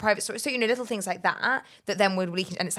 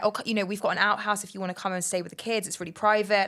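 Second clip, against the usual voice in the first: plain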